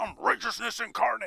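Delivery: loud, rough proclaiming tone. Restating a line more dramatically, the way it was just described: Batman voice. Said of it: "that kinda sound like Batman".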